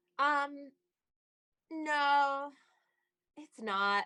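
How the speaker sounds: let-down, disappointed tone with "no" stretched out. Asked if the climbing community is gender mixed, the speaker answers, disappointed. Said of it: "You sound so disappointed when you say that".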